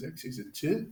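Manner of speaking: "two" murmured in a put-on British accent. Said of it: "Kinda put a British accent on your two".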